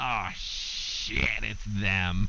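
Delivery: goblin character voice. Game master voices a familiar goblin heard over the winds: goblin voice. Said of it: "a familiar goblin voice going".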